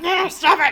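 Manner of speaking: angrily spoken. Acting out waving something at a creature: angry. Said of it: "angrily waving something at him".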